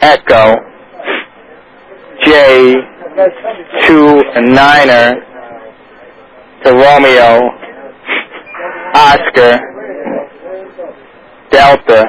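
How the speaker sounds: spaced-out, unhurried reading.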